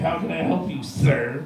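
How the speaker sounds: acted, sassy, snippy tone with attitude. At Target, a lady comes up to the speaker, imitating her snippy attitude. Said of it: "came up to me with attitude again".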